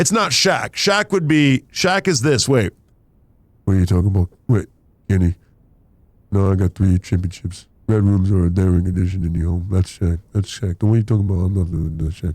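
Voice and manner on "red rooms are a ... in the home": put-on flat monotone voice, lower pitch. Switching between voices in a bit addressed to Kenny, Monotone Man voice. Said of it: "This is Monotone Man".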